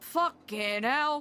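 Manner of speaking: Liverpool accent. Describing a journalist character who talks like a scouser: Scouse accent. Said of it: "He he talks like a scouser".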